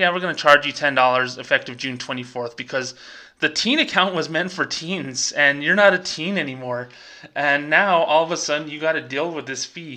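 ordinary talk

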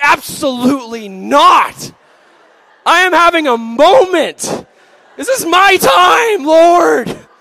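very high, very loud, slow, shrill, drawn-out fury. Retelling refusing God's call to approach a crying store worker, re-enacting own anger. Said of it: "I was so mad".

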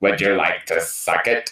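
deliberately bad put-on classic horror-movie star voice. Joking about an actor's voice, doing a bad Vincent Price impression. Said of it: "I do a bad Vincent Price".

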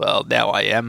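rough, rumbling, low, slow storybook growl. Reading the story aloud, answering Christopher Robin in a growly Winnie-the-Pooh voice. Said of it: "said a growly voice".

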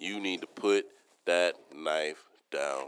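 stern, serious, low, quiet voice. Recalling telling someone to put a knife down, retelling a serious voice. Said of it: "I had to use a serious voice".

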